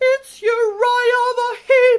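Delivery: very high, very loud, drawn-out ghost shriek. A pair of ghosts cry out as they disappear, screaming. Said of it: "they screamed as they disappeared".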